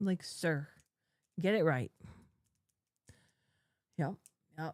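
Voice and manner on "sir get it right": put-on annoyed tone. Retelling own words during a stream: retelling own annoyed words. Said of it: "I was getting annoyed".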